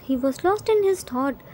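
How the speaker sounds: ordinary delivery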